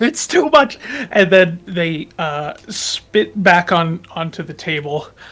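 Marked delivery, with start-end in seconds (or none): 0.0-0.8 very high, shrill screaming outburst. Voicing a child who finds the pepper too spicy: screaming. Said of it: "sort of screams out".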